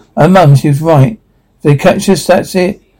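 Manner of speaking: usual speaking voice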